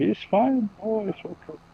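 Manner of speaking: high, slow, bad mock German accent. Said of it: "I did a really bad German accent".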